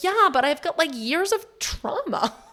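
high-pitched delivery. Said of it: "I'm like".

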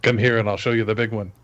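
ordinary talk, nothing marked

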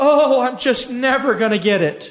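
slightly whiny, complaining tone. Retelling what a woman whined after she stopped praying; imitating a whine. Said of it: "she kind of whined out".

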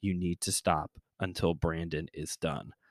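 soft, hushed, half-whispered word. Retelling what a friend said to a teenage boy: imitating a friend half-whispering. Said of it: "whispers to him".

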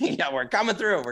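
high, clear calling-out yell. Guiding a fellow runner through a marathon, retelling his own yell. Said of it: "And just yelling".

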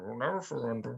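muffled mumbling voice. Voicing a faint voice heard from inside the hat: odd muffled mumbly voice. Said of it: "just very odd and muffled".

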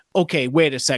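normal talking voice

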